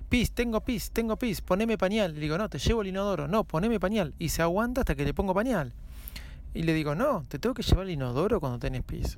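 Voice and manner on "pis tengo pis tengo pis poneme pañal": high, put-on tiny child voice, shouting. Speaker retelling how the little girl yells at her: imitating a little child shouting. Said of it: "empieza a gritarme este, toda chiquitita".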